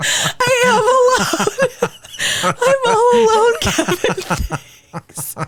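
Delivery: fake sobbing. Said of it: "I'm literally crying right now".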